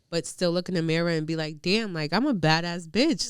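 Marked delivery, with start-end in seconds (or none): none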